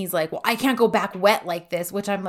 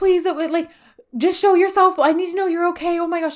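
panicked, very high-pitched, loud frantic pleading; 10 semitones higher, 6 dB louder than usual. Retelling a character pleading after someone vanished: imitating someone freaking out. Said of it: "she's freaking out".

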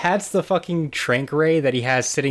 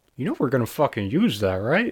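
put-on, muttered whisper under the breath. Retelling what a man whispered to another guy as she walked away; retelling a whisper under breath. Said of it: "literally like whispers under his breath".

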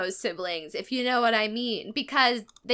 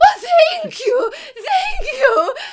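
acted weeping, very high and very loud; 10 dB louder than usual. Retelling how an old woman reacted to the royals, the speaker is imitating a woman sobbing. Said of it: "Just sobbing instantly".

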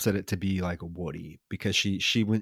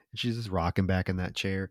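ordinary delivery

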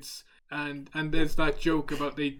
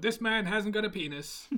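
pitched-up cartoon puppet character voice; 6 semitones higher than usual. Imagining a film scene with Kermit in the lead role, Kermit the Frog voice. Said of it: "in his Muppet voice".

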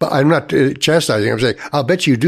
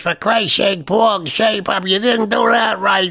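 tiny, rasping little voice, pitched up; 7 semitones higher than usual. Speaker quotes someone addressing Paul, in a raspy little voice. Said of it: "with this graspy little voice".

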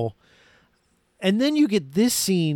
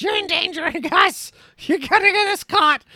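high-pitched mock shriek, crazed woman voice. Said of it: "the whole time she's yelling".

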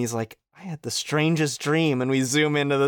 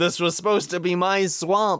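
put-on ogre voice, higher; 4 semitones higher than usual. Describing a game where characters yell out a line, Shrek voice. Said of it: "the Shrek voice says".

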